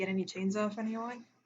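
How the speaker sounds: very soft, hushed delivery. Asking her in character about chains, speaking very quietly. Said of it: "I'm gonna say it very quietly to her".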